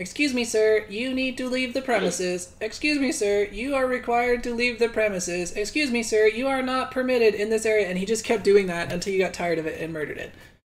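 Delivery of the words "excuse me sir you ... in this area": pitched-up robot announcer voice, repetitive. Voicing a robot that keeps telling an intruder to leave: robot voice. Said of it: "all it was doing was sitting there going".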